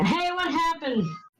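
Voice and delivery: shouting in a put-on character voice. Calling out in character to the engineer on the way to the ship: yelling. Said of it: "I yelled to the engineer".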